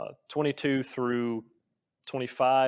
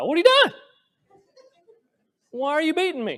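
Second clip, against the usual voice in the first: booming, very high, sing-song, swooping talking-donkey voice; 10 dB louder than usual. Retelling the talking donkey's words to Balaam: Eddie Murphy voice. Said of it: "can't not hear Eddie Murphy's voice".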